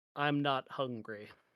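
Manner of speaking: stubborn, pointed, said outright. A player's character turns and sits back on the bed to declare: very loud declaration. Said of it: "very loudly say".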